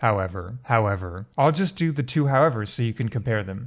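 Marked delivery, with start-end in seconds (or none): 0.0-1.3 however said with falling pitch. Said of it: "versus option one".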